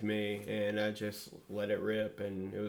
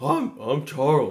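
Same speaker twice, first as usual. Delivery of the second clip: very loud, full-volume, booming delivery; 4 semitones higher, 10 dB louder than usual. Showing the others an impression of Charles: Charles impression. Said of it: "so my Charles was".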